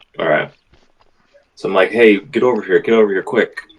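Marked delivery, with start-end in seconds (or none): 1.9-3.6 loud, acted stage whisper. Telling a story, calling someone over by the cell bars, re-enacting a loud whisper. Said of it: "like a loud whisper".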